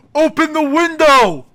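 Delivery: high-pitched shouted yell. Retelling a chase, imitating a friend: imitating someone yelling. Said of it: "Farzan, yells".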